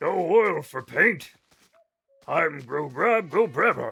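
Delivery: slow, drawn-out, lumbering creature voice. Acting out what they said about oil paintings: Oblivion orc voice. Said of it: "they talk like a fucking Oblivion orc".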